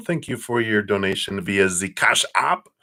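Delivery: put-on German accent. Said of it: "German accent for that".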